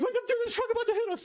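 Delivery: sudden, very high, shrill scream. Retelling a dad's highway prank on mom: imitating someone screaming. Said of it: "he kinda screams like that".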